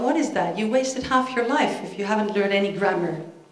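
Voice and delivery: ordinary talk, nothing marked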